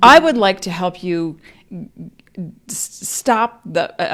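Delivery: stammering, tripping on words. Speaker offering help to a listener, stuttering. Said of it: "I'm stuttering".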